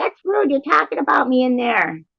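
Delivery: dog voice, pitched way up high. Recalling a friend's Teddy voice out loud: Teddy voice. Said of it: "I love your Teddy voice".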